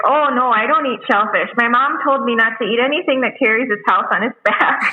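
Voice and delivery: put-on Yooper accent, Michigan's Upper Peninsula. Speaker imitates Amber to the other speaker, in an Upper Peninsula accent. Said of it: "That was a good accent".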